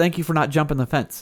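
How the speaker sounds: usual speaking voice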